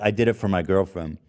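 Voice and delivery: ordinary delivery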